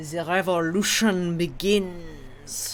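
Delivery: loud, bad fake French accent, beginning drawn out. Recapping a show's cliffhanger, quoting a woman's line in a failed French accent. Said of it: "and very much not a French accent".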